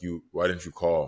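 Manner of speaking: plain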